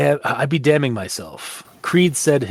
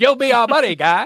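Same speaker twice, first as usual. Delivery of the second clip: cartoon Canadian accent, very high-pitched; 10 semitones higher, 3 dB louder than usual. Riffing on a character who turns Canadian, in a South Park Canadian accent. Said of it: "he becomes a Canadian from South Park".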